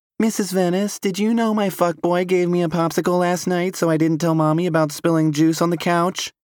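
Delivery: put-on small, very high kid voice. A mother imitating her daughter talking to her teacher, in a tiny voice imitating Chloe. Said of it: "In a tiny voice, [name] says".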